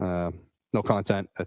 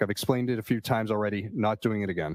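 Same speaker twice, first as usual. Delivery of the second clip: normal talking voice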